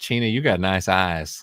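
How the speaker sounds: put-on flirty, sweet-talking southern American accent. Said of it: "with this southern accent".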